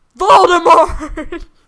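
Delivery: shrill, booming, very loud, high, defiant bellow. Recapping a book chapter, the speaker voices Harry's line to Hagrid: Harry bellowing, acted out. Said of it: "Harry bellows".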